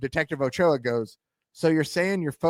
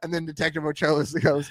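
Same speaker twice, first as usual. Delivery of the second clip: ordinary delivery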